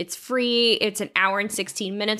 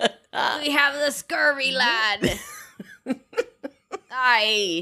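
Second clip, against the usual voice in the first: put-on drunken pirate voice, much higher; 4 semitones higher than usual. Playing a drunken pirate throughout the episode: drunken pirate voice. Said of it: "Erica will be a drunken pirate throughout this episode".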